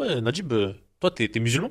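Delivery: bigoted tone, corporal's manner. Retelling a corporal questioning a soldier: imitating a racist tone. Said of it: "il avait un ton raciste".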